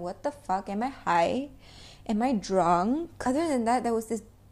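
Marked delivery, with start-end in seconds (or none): none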